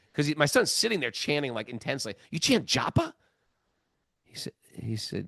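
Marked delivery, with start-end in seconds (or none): 2.3-3.2 confrontational, accusing, attacking, high-pitched delivery. Retelling a stranger's question to a son: imitating an attacking tone. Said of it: "it was like an attack".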